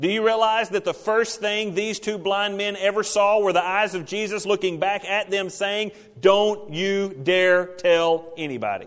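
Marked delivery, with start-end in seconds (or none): 6.2-8.9 mock-stern, emphatic tone, slower. Retelling a warning given to two blind men, acting out a stern warning. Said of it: "Sternly, emphatically".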